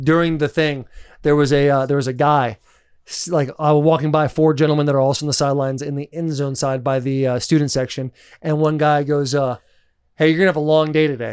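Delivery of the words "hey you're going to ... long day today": mock unconvinced tone, faster. Retelling what a man on the sidelines said to him, imitating zero conviction. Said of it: "he says it with a zero conviction".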